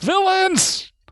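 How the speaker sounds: very high, piercing, shrill screaming yell. Narrating a scene as the party heads for the buildings: screaming yell. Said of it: "You hear a scream, yell out".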